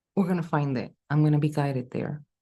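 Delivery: ordinary delivery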